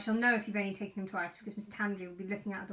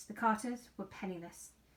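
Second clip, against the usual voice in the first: ordinary delivery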